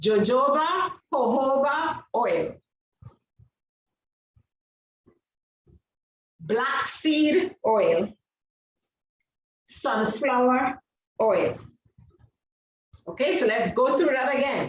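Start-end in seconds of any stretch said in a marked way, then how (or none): 0.0-11.6 very slow, word-by-word dictation pace. Listing carrier oils for listeners taking notes, said very slowly. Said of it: "I'm going to say these very slowly".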